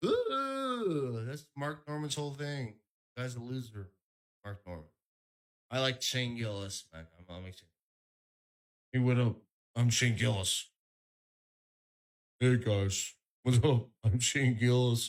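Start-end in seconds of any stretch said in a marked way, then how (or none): 8.9-15.1 casual, offhand tone, said twice. Doing an impression of Shane Gillis greeting the audience. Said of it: "He does that".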